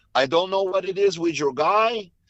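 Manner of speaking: put-on Portuguese accent. Retelling what a man named Glover said, in Glover voice, Portuguese accent. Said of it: "I'm gonna do it in my best Glover voice because Glover is Portuguese".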